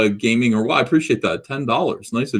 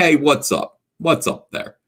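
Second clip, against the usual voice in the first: laid-on Philadelphia accent; 3 semitones higher than usual. Explaining how the character should sound, doing Cyberfrog as a Philly dude. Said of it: "Cyberfrog just sounds like a Philly dude".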